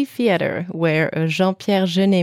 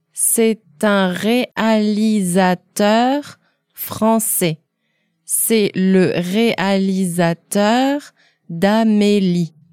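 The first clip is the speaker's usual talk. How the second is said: a little more slowly, slower pace; 2 semitones higher than usual. Repeating a dialogue line for learners: a little more slowly. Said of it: "a little more slowly".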